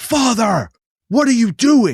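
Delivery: very high, wild, swooping cave-dweller yell. Game narrator voicing a cave dweller calling out to its father: cave dweller yelling. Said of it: "You hear this cave dweller yell".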